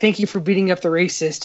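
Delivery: ordinary talk, nothing marked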